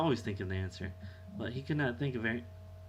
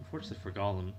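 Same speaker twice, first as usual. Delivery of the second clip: plain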